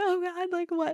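tearful crying in a very high voice. Retelling being pulled over and told to turn off the engine: retelling own crying. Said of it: "And I'm like crying".

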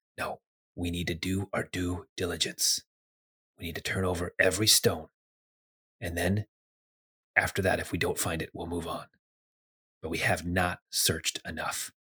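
soft, hushed, secretive whisper. Voicing an eavesdropped stranger who answers another: whispering. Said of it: "the other one whispers back and says".

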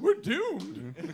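soft, prissy, fussy put-on robot voice. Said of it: "his best three P O voice".

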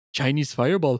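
put-on odd French-British accent. Recalling the scene where Barty Crouch hands out dragons, imitating Barty Crouch's odd accent. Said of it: "He sounds French and British at the same time".

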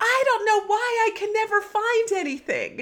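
put-on very high, frantic, drawn-out freak-out. Retelling what she said in a junk-filled room, imitating someone freaking out. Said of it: "like freaking freaking out".

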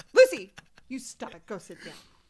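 stern, wild, swooping mom scolding voice. Speaker tells her barking dog to stop and sit, in a wild mom voice. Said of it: "That was a wild mom voice".

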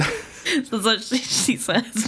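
ordinary delivery, nothing marked

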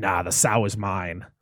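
demonic low voice. Speaker retelling a possession film scene, answering as the demon voice. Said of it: "that's when the demon voice starts to come out".

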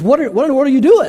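put-on astonished tone. Retelling how the seated Indian gentleman looks up at the student: imitating astonishment. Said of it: "looks up in quite astonishment and says".

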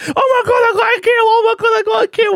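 very high-pitched, shrill, thrilled excited scream. Describing a shooting game, the speaker imitates Cassie screaming excitedly. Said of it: "screaming like".

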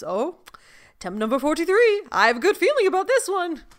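high character voice with swooping, swinging tune. Describing a scene where Rumple counts her attempts, do the Rumple voice. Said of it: "you just have the rumple voice in the back".

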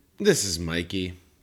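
sort of forlorn, disappointed, a little down. Co-host introduces himself at the start of the show: forlorn tone. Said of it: "You said that in sort of a forlorn way".

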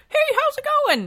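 very high, funny, harmless-sounding puppet voice. Describing how a doctor might use a hand puppet, Mr. Sock puppet voice. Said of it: "He'd have a funny, non-threatening voice".

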